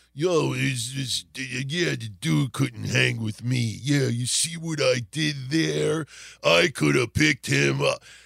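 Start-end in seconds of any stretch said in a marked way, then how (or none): 0.2-3.8 put-on surfer voice, much lower. Describing a performer billed from South Africa, quote him: Hague surfer-dude impression. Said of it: "he sounds like a fucking surfer".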